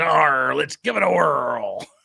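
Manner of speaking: slow, rough, drawn-out buccaneer growl. Streamer reading out a member's Super Chat message aloud: pirate voice. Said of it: "reading Super Chats in, in pirate voice".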